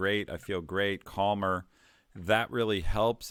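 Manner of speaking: normal talking voice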